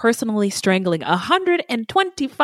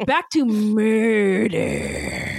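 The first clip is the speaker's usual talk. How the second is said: scary, swooping true-crime narrator, "murder" drawn out. Steering the talk back to murder, doing a Dateline host impression. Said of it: "did I sound like the dude from Dateline?".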